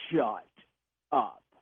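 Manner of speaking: low, gruff, stern yell. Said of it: "in a very gruff, very stern voice, yell at my child".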